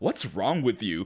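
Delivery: put-on disgust. Retelling what one woman bluntly asked another, retelling a disgusted question. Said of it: "The look of disgust on her face".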